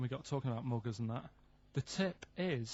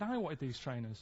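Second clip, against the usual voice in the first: plain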